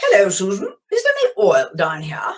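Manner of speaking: put-on terribly proper English accent, lilting and swooping. Retelling a phone call from Belize, imitating Ian's proper English accent. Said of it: "in a very, very proper English accent".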